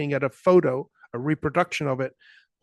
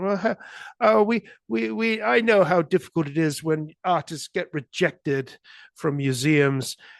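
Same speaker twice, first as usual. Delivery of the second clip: stuck-up, superior, snooty put-on Australian accent; 2 semitones higher than usual. Retelling what a woman said about the speaker's work, in her snooty Australian accent. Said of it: "in her snooty Australian accent".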